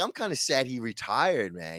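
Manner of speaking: usual speaking voice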